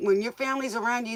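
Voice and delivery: ordinary delivery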